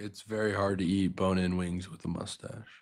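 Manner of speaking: gloomy, depressing delivery. Chatting with another speaker, the line comes out as a depressing delivery. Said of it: "that sounded really depressing".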